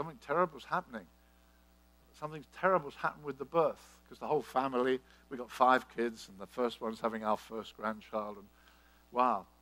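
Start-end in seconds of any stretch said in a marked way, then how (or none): none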